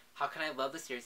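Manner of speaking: ordinary talk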